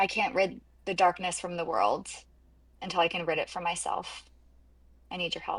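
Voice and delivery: half-whispered voice. Half-whispering a plea to a statue so another character won't hear: half-whispering in character. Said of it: "and I'm just gonna whisper".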